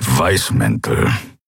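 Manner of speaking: scornful, dismissive snort, voice very low. A character echoes another's mention of a group, dismissive snort. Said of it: "Keru schnaubte abwertend".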